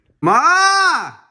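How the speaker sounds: calling out in a high, loud voice.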